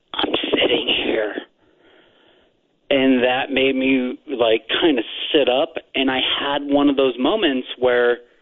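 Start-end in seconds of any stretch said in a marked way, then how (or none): 0.2-1.4 deep whispering voice. Speaker retelling a voice they heard while sitting there, deep whisper. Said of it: "in a whispering, deep kind of whisper voice".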